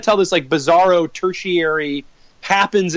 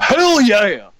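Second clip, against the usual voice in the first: douchey dude-bro delivery, pitched up; 5 semitones higher, 4 dB louder than usual. Complaining about Aquaman, imitating him in a douchey bro voice. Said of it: "it's this douchey bro voice".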